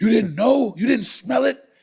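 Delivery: scolding drill sergeant voice, barked and pitched high.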